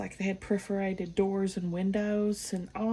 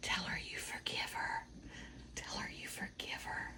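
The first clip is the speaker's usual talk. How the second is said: hushed whisper under the breath, barely voiced. Retelling how a friend urged from the passenger side: imitating someone whispering.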